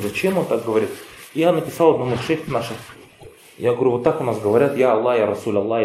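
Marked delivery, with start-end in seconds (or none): none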